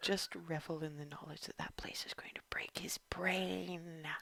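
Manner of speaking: murmured aside, very soft, brain drawn out. In a roleplay scene, a character turns to Ava with a quiet aside. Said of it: "And then quietly to Ava".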